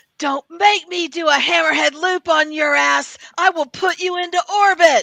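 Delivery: very loud, high-pitched battle yell in changed voice. Retelling jumping in to help take him down, retold yell in a different voice. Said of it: "I start in a completely different voice. I start yelling".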